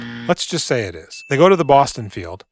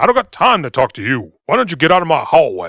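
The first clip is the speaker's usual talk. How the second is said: deep bass movie-star voice, higher and louder; 3 semitones higher, 6 dB louder than usual. Retelling a scene where a writer chases a visitor away: James Earl Jones voice. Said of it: "That's my James Earl Jones".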